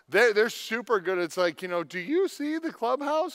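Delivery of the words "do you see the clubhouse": squeaky voice pitched way up high. Describing an interactive kids' show, in a Mickey Mouse voice. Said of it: "And that was my Mickey voice".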